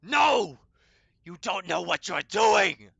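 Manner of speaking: raw, ragged, horrific shriek, very high and very loud. Narrating a voice coming from a hand that screams out, horrific screaming. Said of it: "he says in a, a very uh, horrific sounding tone, uh, he screams out".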